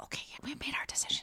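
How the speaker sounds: whispered, very quiet. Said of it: "I'm whispering".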